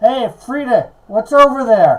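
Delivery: yelling out as if across a distance. Player voicing Sunny calling over to Frida, Sunny yelling out. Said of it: "Sunny's gonna yell out".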